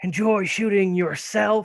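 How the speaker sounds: loud, snarled voice. Game master voices a character speaking over the intercom, snarling. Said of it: "he snarls over the intercom".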